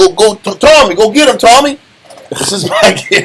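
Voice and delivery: bad fake Italian accent. Speaker imitates loan-shark goons urging on Tommy, horrible Italian voice. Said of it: "that was a horrible Italian voice".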